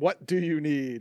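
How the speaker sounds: irritated, annoyed, threatening and menacing tone. Game narrator voicing a summoned being who looks straight at the player, menacing and annoyed. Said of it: "it's a very menacing kind of like you pissed him off".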